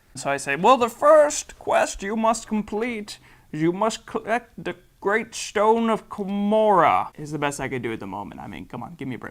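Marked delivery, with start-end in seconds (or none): 0.6-7.1 put-on slow, high-pitched old-man voice. Retelling a game session, the speaker voices the quest-giver's instructions: old guy voice. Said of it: "in this old guy voice".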